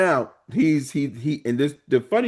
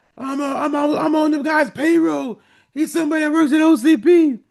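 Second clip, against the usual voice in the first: put-on panicked scream, much higher and louder; 14 semitones higher, 4 dB louder than usual. Retelling a movie scene where a man flees RoboCop, imitating panicked screaming. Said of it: "he is screaming and panicking".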